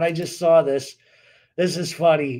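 words broken up by laughter, laughing through them. Reacting to something just seen on screen, laughing while talking. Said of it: "sorry, I'm laughing".

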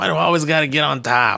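high raspy, nasty voice. Imagining a Boston-accented woman's lines, in a raspy Fran Drescher voice. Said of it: "she's got like a raspy, nasty ass voice".

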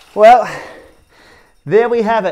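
puffing, spent, winded, out-of-breath delivery. Host wrapping up a bit of fun in the Lama Lab, out of breath. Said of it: "And I'm out of breath".

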